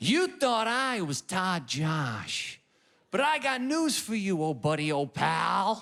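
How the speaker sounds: put-on generic American accent, swooping and very drawn out. Imitating an american undercover boss's big reveal: put-on american accent. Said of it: "That's all fifty states right there".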